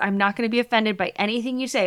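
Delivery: ordinary talk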